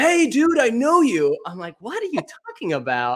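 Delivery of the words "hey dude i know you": shrill, high, loud, stretched-out yell. Recalling a girl who came up yelling that she knew them, imitating someone yelling. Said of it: "who's this girl just yelling at me".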